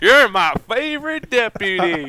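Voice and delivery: laughing, then slow, high, drawn-out words. Describing a scary forest scene, Woody laughs and speaks: Woody voice, laughing. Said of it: "you hear him laugh and go".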